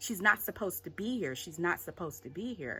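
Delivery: normal talking voice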